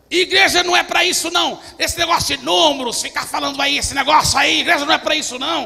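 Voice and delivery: booming, very loud, high-pitched shouting. Speaker retells a man who came at him yelling, retelling a man yelling. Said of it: "E ele veio gritando".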